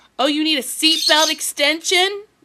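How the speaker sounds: very loud, high flight attendant voice, blaring. Retelling a flight attendant's question about a seatbelt extension: imitating a loud flight attendant. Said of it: "they said it really loud".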